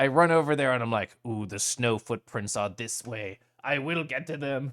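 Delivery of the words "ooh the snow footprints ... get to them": mechanical, robotic put-on machine voice. Retelling own thoughts while chasing someone in the snow: put-on robotic hunter voice. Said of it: "Doing that voice actually scratched my throat".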